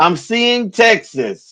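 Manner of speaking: slow, drawn-out, dramatic prophetic declaiming. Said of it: "he said".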